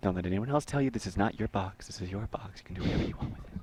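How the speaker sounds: soft, gentle, feminine voice. While building a trap in a game, a player does a feminine Bob Ross impression. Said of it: "That's a pretty good impression".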